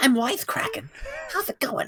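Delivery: very high-pitched character voice swooping around. Pitching a joke crossover game, voicing its hero: Conker voice. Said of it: "how good you are at doing the Conker voice".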